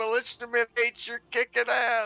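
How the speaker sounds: re-enacted shouting. Speaker recalls shouting encouragement at their militiaman: retelling a shout. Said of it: "I'm just shouting".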